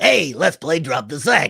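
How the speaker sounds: raspy, loud, swooping cartoon voice. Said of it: "a little bit of a rasp in his voice".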